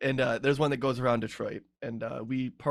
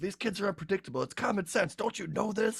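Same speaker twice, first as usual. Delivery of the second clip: mock security guard voice, high angry scolding yell; 8 semitones higher than usual. Parent recounting a security guard on a platform yelling at him, retelling a security guard's yell. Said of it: "he was like yelling at me".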